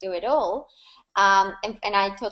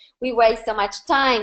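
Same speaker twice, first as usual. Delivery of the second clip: ordinary talk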